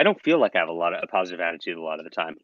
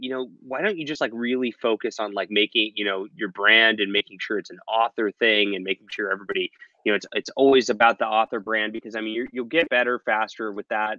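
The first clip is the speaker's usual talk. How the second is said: normal talking voice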